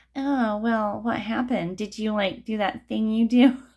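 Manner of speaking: snooty, prying, superior, nosy busybody tone. Speaker imagines family reacting to news of a breakup; mock-snooty nosy relative voice. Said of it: "Do you like my snooty family, nosy family member voice".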